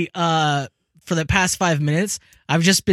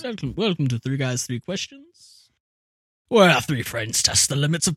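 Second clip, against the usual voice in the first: put-on low, posh upper-class British accent; 4 semitones lower, 3 dB quieter than usual. Opening a Victorian-themed show episode, in a posh British accent. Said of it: "In a British accent?".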